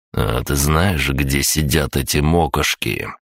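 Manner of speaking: plain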